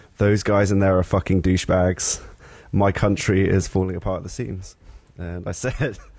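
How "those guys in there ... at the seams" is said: normal talking voice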